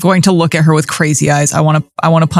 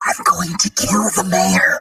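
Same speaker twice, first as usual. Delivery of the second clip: loud stage whisper; 3 semitones higher, 6 dB quieter than usual. Playing a character who leans in to a guard: loud stage whisper. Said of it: "Deimos's loud whisper".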